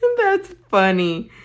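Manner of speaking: words spoken through laughter. Reacting to a comment about falling but saving the drink, laughing while talking. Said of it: "Sorry, I'm laughing".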